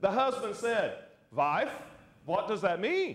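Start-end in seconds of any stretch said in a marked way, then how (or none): 1.3-3.2 put-on heavy, thick Eastern European accent. Telling a joke, the speaker voices the husband asking his wife, thick eastern european accent. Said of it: "In his thick Eastern European accent".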